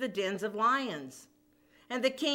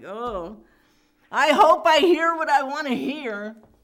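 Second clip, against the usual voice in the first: play-acted, very loud, woeful lamenting cry; 4 semitones higher, 10 dB louder than usual. Retelling the king coming to the lions' den for Daniel; mock-crying, woeful. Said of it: "He's crying like".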